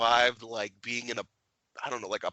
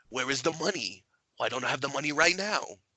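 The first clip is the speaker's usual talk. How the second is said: cheesy, laid-on-thick Italian mobster accent; 2 semitones higher than usual. Complaining about movie villains, demonstrate the cheesy Fat Tony mobster voice. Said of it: "I'm sick of these Italian mobster accents".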